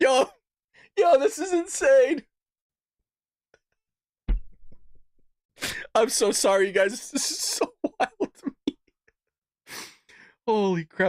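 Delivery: laughing while talking. Reacting live to a video, cracking up, laughing while talking. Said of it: "Let me get it together".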